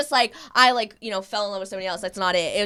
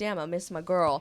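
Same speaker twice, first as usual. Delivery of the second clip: plain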